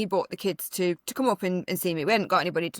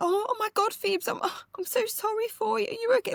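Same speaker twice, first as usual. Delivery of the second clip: mock, very high, deeply emotional outpouring. Retelling how the son spoke to his sister in hospital: imitating a very emotional child. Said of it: "really emotional".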